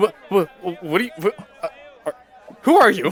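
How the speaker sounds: high, rising, terrified, stumbling stammer. Retelling how the elf reacted when it yanked its arm back: acting out a terrified, stammering elf. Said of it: "looks like like kind of terrified of it".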